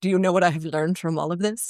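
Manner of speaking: snide tone. Retelling what a stepson said after it all worked out: imitating a snarky remark. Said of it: "in a very snarky, very me kind of way".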